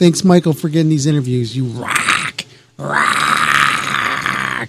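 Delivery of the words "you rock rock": really bad put-on voice with swooping, swinging pitch. Thanking someone for getting interviews: Vince McMahon impression. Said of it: "really bad imitation of Vince McMahon".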